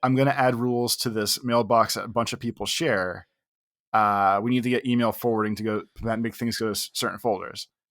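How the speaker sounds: ordinary delivery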